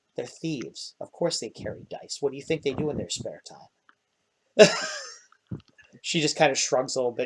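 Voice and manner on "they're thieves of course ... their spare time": hushed, whispered side remark. A storyteller voices the character Canvar, whispering. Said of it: "whispers over".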